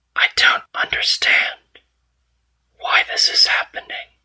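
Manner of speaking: breathy, ghostly whisper. Voicing an unseen entity after dust settles: whispering entity voice. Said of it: "you hear whispering".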